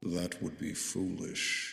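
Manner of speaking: hushed, whispery voice, altered by voice changer. Narrator voicing a creature heard in the listeners' heads, voice-changer telepathic voice. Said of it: "That was my voice changer".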